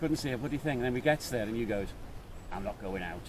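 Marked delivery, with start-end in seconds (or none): 2.5-3.2 put-on blunt, grumpy, flat tone. Retelling what the other rider said on arrival at the hotel: imitating a friend's grumpy refusal. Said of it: "I didn't quite do it in that type of voice".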